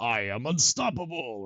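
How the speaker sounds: war cry, let rip loudly. Describing game audio cues, the speaker imitates a character's war cry. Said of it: "war cry that they do when they get nanoed".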